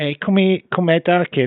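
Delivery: Liverpool accent. Asked to do a scouse accent, showing how it's done, scouse accent. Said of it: "Here's how you do it".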